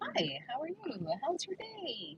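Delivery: very high, nice, sweet, sing-song voice. Demonstrating how the Brooklyn Karen bit starts, in a sweet, higher-pitched voice. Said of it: "The voice goes a little higher pitched".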